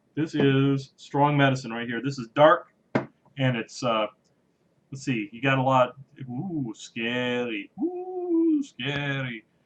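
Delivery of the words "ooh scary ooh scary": sing-song ooh, stretched and swooped. Pouring a dark beer, quoting a Second City TV catchphrase. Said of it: "that's a Second City T V reference".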